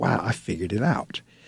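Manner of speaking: soft, low, quietly amazed realization. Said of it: "'cause I was like".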